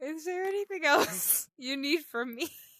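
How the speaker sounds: talking through laughter. Speaking in character to a shopkeeper during a game: laughing while talking. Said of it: "I'm laughing while trying to talk to this man".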